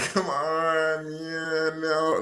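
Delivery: mock very slow, high, drawn-out whining. Imitating a player who starts whining: imitating a whining player. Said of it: "You start whining like".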